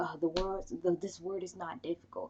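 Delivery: mock irritated, angry, condescending teacher voice. Imitating the teacher getting mad at a struggling reader: imitating a mad teacher. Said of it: "how's she gonna get mad at him and be like".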